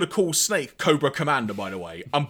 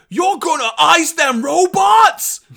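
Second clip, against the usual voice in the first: put-on loud, high-pitched New York accent; 12 semitones higher, 7 dB louder than usual. Recapping an episode, speaker quotes Dutch's reply: Dutch's New York accent. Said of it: "in a very New Yorker-style accent, which I'm about to butcher".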